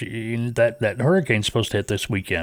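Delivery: ordinary talk, nothing marked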